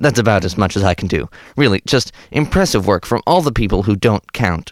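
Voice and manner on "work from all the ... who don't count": ordinary talk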